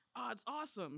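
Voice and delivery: put-on, suddenly lit-up eager enthusiasm. Retelling a coworker describing YouTube: imitating enthusiastic speech. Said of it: "showing some of the first enthusiasm".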